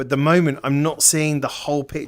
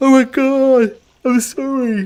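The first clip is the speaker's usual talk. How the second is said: said through a yawn, very loud, very high; 11 semitones higher, 7 dB louder than usual. Mid-commentary, brain wanting to shut down: yawning mid-sentence. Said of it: "I'm yawning".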